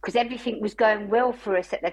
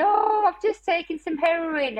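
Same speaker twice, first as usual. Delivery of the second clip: put-on high, tearful sobbing breaking up the speech; 8 semitones higher than usual. Recalling being in the hospital to give birth, retelling crying while speaking. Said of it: "I just started really crying and saying".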